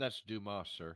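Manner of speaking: put-on proper English accent. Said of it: "Proper English".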